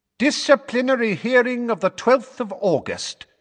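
resonant, very high, ringing voice. Opening a disciplinary hearing as another man begins taking notes, in a ringing voice. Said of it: "said Fudge in a ringing voice".

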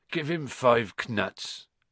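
sleepy, drowsy. Narrator reads Hagrid's line to Harry, sleepy. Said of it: "said Hagrid sleepily".

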